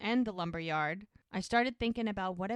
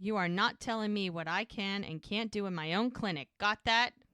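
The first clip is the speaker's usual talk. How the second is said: put-on angry voice. Retelling the doctor refusing orders in his clinic: imitating someone angry. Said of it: "Doc is pissed".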